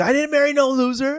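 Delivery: very high, shrill, harsh, taunting voice. Retelling what his wife says during board games: imitating his wife speaking harshly. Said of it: "Mia gets a little harsh".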